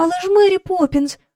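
sudden, high, frightened cried-out exclamation. Jane cries out to Mary Poppins after her answer. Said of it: "скрикнула Джейн".

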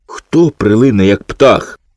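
ordinary delivery, nothing marked

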